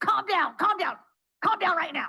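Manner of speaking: high, frazzled, stressed yelling. Speaker describes a stressed family late at night, imitating a parent yelling. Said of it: "You can't yell at someone to calm down".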